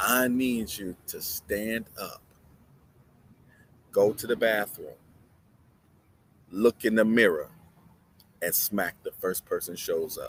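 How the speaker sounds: put-on calm, maternal tone. Quoting what an author always tells the people she helps, imitating a calm, motherly voice. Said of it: "in a calm, motherly voice".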